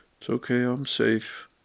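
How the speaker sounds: slow, flat, toneless, unenthusiastic monotone. Recovery talk, showing self-talk without encouragement: flat monotone. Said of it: "if you just think monotone".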